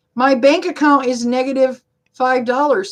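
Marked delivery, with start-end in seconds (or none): none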